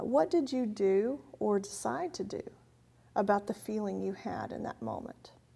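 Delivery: ordinary delivery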